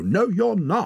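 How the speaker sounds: shrill yell, pitched very high and loud. He shouts at his companion, who is falling asleep in the snow, shouting. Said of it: "shouted Torak".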